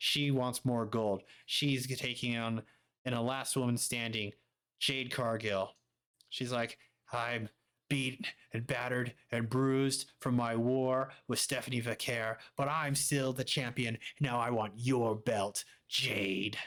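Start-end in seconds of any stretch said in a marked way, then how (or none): 7.1-16.6 boastful anime villain voice. Previewing a match, the speaker voices the champion challenging her opponent: Blair Davenport as anime villain. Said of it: "I don't know why I made her sound like a Dragon Ball Z villain".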